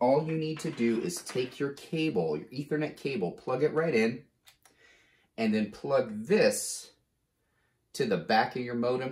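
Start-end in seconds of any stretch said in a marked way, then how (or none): 5.4-9.1 slow, careful, step-by-step pacing. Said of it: "I know I'm talking slow".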